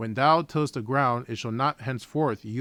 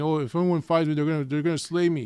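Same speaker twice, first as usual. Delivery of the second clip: mock complaining, higher pitch; 4 semitones higher than usual. Retelling the story of a man who killed his brother, mimic his complaint. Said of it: "he's complaining".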